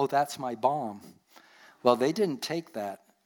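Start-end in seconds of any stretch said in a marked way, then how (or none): 0.0-1.0 joking tone, quieter and slower. Speaker retells what a friend said to a plane steward, retelling a joking remark.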